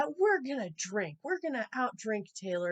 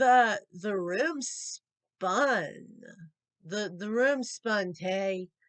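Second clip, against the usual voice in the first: play-acted, very slow, words dragging in a drunken slur; 3 dB louder than usual. Retelling a drunken reply to Taylor, who asked if I was okay, imitating drunken slurring. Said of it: "I'm slurring bad at this point".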